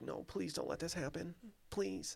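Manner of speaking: hushed, whispered pleading, begging tone. Imagining Tucker Carlson reacting right now: mock-pleading Tucker Carlson. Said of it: "just sitting there right now just like".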